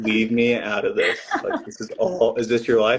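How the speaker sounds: loud, annoyed-sounding mock complaint through laughter.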